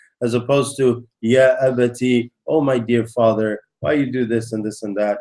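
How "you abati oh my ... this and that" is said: tender, gentle, deferential and respectful tone. A speaker shows how to address one's father, gentle and respectful. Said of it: "in a very gentle and respectful way".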